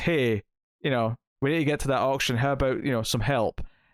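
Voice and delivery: ordinary delivery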